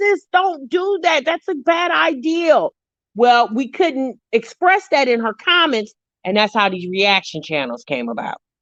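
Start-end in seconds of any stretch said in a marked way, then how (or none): 0.0-2.7 mock very high, stretched-out, drawn-out voice. Explaining how reaction channels began while watching a video: re-enacting screaming at a phone. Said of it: "we're screaming at the phone like".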